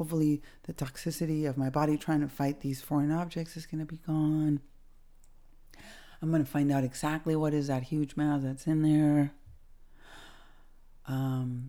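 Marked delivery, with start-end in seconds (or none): none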